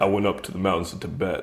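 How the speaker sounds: low, soft, quiet, hushed grave voice. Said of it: "He's like".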